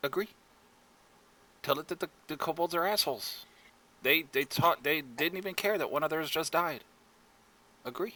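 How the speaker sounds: hushed whisper. In a tabletop game, voicing a character who looks at you and whispers. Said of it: "she'd kind of whisper".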